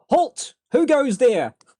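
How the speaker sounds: very high, very slow, loud, drawn-out calling out. Voicing Triton calling out toward the rustling bushes: calling out a challenge. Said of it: "Triton's gonna call out".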